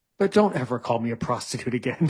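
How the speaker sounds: put-on stoic German accent. Retelling what a masseur told the speaker: imitating a stoic German voice. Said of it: "this stoic German way".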